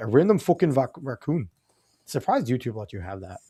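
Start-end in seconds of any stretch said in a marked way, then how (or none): 0.0-1.5 put-on Irish accent, slower. Reading out a word someone spelled, doing a Conor McGregor Irish accent. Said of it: "like the Irish... Like if Conor McGregor was saying it".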